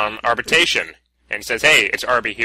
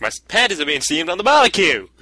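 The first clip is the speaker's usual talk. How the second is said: high, put-on Australian accent; 6 semitones higher than usual. Showing a co-player how to say the barbecue line, stereotypical Australian accent. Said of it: "with the stereotype accent".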